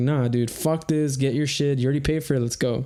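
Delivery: plain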